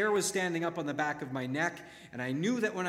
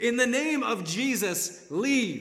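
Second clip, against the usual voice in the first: mock top-of-the-lungs bellow, slow, booming, high; 7 semitones higher, 6 dB louder than usual. Retelling shouting at Satan in a dream: retelling a bellowed shout. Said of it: "at the top of my lungs, I bellowed".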